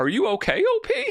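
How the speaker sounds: very high, slow, sincere voice. Retelling a film scene where a character asks if someone is okay: imitating sincere Chris Mannix. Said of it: "in such a si-, si-, sincere way".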